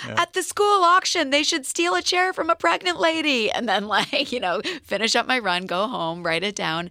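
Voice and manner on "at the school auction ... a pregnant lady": wild, crazed, loud yelling at very high pitch. Recalling yelling ideas into phone voice memos while running, retelling a yell. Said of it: "I'm yelling like".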